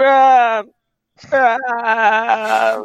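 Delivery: shouting. Calling for a party member outside the room: shouting a name. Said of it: "so if you just keep shouting".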